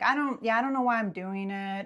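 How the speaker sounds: mimicking a flat monotone. Retelling what she said while seeming checked out: imitating someone's monotone. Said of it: "she was just kinda, like, monotone".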